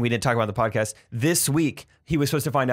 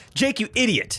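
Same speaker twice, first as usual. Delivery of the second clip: very high, sneering, scornful, disdainful contempt; 12 semitones higher than usual. Speaking directly to Jake in a group conversation, disdainful. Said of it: "I love the way you just said that with such disdain".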